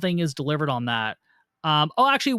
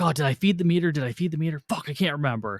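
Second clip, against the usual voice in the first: mock-worried, put-on anxious fretting. A speaker acts out how a man constantly frets, mock-worried impression. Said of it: "constantly getting worried about getting a parking ticket".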